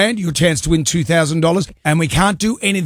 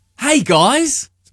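fake Australian nature presenter voice; 8 semitones higher than usual. Introduced to the audience, a guest performs his Robert Irwin impression. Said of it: "his Robert Irwin impression".

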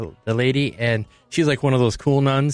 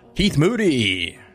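on-air radio DJ announcer delivery; 3 semitones higher than usual. Asked to say the name in a radio voice, the speaker does a radio voice. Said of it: "give it to me in a radio voice".

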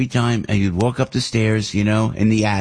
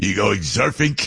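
put-on Brooklyn accent. Retelling how his Brooklyn-born dad asked him about surfing, in dad's Brooklyn accent. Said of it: "because he's from Brooklyn".

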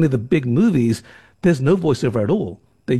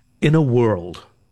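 epic, intoning movie trailer narrator voice; 3 semitones lower than usual. Answering a question about voices by demonstrating the movie trailer voice. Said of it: "your brain already went straight to the movie trailer voice".

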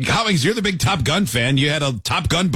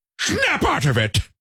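very high-pitched put-on voice; 12 semitones higher than usual. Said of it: "That was a good [name] impression".

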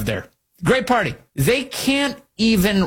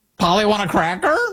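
put-on parrot voice. Mocking how a candidate sounds, the speaker does a parrot voice. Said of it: "sound like the parrot that sits on the shoulder of the pirate captain".

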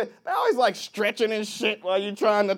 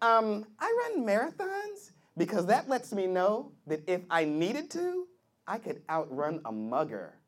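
put-on young woman voice; 9 dB quieter than usual.

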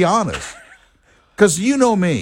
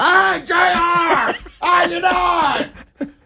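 high, slow yell across a room. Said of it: "He would yell across the".

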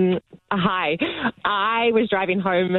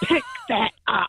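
very slow, pitched-up, grumpiest mum voice; 6 semitones higher than usual. Retelling a finger-wagging moment, the speaker does her grumpiest mum voice. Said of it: "like my grumpiest mum voice with the face and everything".

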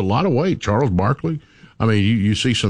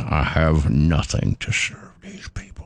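mock clenched teeth, much lower pitch, slower; 6 semitones lower than usual. Speaker acts out what their mom would say, imitating mom through clenched teeth. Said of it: "She'd clench her teeth".

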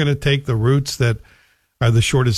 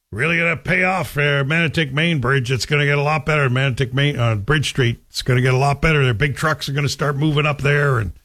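put-on local small-town Manotick accent. Retelling what local people said when a new bridge opened; put-on Manotick accent. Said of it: "I'm doing my Manitic accent".

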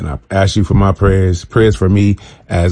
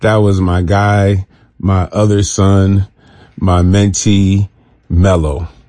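very slow voice catching with grief, choked up. Sharing that someone very close died this week, choked up. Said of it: "I'm getting choked up even talking about it right now".

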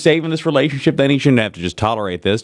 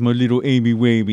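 put-on babyish baby talk; 2 semitones lower than usual. Acting out a partner's imagined line to his wife: put-on baby talk. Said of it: "if he baby talked back".

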